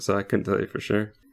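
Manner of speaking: normal talking voice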